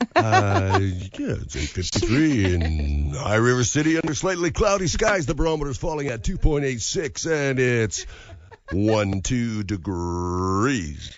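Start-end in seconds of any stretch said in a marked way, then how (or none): 1.2-11.2 put-on classic swooping old-school radio announcer voice. Asked for the exact time, giving it in a radio voice. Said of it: "Is that your radio voice?".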